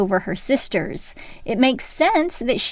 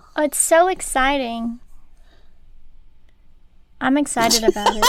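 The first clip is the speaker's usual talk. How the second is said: flat, insincere deadpan enthusiasm with no spark; 3 semitones higher than usual. Saying you're excited about the first new book club: flat, insincere-sounding excitement. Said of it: "that didn't sound sincere".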